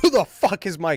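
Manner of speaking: hostile, confrontational, angry and aggressive. Recounting mistaking your host for an intruder, retelling an angry yell. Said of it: "I was a lot angrier and a lot more aggressive".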